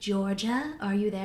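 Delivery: mock-dramatic, acted dramatic delivery. Retelling how a psychologist questioned a woman, mock-dramatic question. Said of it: "he asks her very dramatically".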